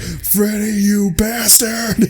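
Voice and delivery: mock very high-pitched, furious, angry yell. Retelling a video where Mark freaks out: imitating an angry yell. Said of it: "pissed off at Freddy".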